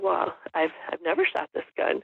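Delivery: ordinary delivery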